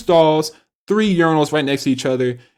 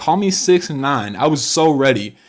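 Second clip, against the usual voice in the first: usual speaking voice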